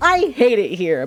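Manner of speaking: mock bright, upbeat, cheery, chipper, drawn-out delivery. Telling about a coworker's recorded button message, imitating his chipper voice. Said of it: "he says it with the most, like, chipper sound".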